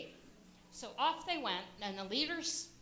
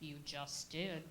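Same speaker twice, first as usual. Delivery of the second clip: slow, plodding, deep donkey drawl; 6 semitones lower, 8 dB quieter than usual. Narrator reads the donkey's reply to the two mice, in a slow, low donkey voice. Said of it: "in his slow, low voice".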